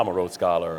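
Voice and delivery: mock deepened voice. Telling how the date began at her door, retelling his real deep voice. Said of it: "Then my voice got real deep".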